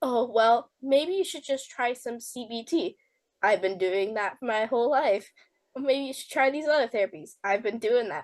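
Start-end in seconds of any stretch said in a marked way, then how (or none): none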